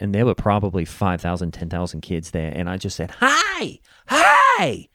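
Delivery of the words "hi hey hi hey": play-acted yell, very high, very slow, drawn out. Retelling calling out to thousands of kids across a field, retelling own yell. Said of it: "I had to yell at them across the field".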